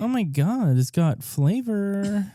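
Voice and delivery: put-on high, camp, exaggerated delivery.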